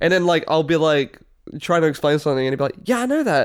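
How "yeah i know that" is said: put-on high, annoying little-kid voice. Retelling what a student kept saying: imitating an annoying kid. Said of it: "annoying kid voice".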